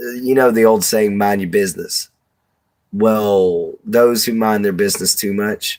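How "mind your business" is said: ordinary talk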